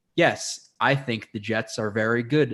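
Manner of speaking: unhurried, leisurely, slow, drawn-out plodding speech. Describing a slow-paced friend, imitating slow-paced speech. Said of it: "a really slow paced".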